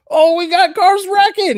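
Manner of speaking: very loud, high, animated, excited yell. Retelling a commentator's call during a wreck on a bumper cam: imitating a yelled call. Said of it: "Like, yelling it".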